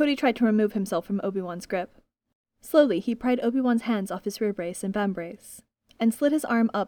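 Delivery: ordinary delivery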